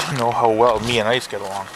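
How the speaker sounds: ordinary talk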